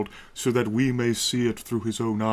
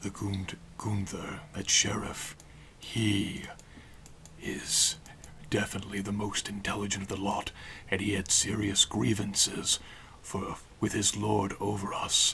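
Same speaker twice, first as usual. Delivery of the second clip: quieter whisper, spoken in character; 2 semitones lower, 8 dB quieter than usual. Voicing a character whispering to a companion while walking: whispering in character. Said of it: "Whispering to, uh, Eluneri".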